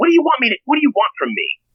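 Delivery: shrill, very high, swooping outraged shrieking yell. Retelling what a stepmother yelled during an argument: imitating someone yelling. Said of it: "she literally yelled at me".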